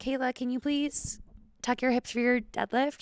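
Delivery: unsure, uncertain tone.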